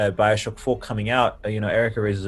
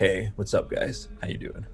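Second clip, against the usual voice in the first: low, hushed, breathy, deeper dropped-down register; 7 dB quieter than usual. Coaching someone not to sound nervous, greeting in a lowered, deeper voice. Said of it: "just lower your voice. Like, come down here with me".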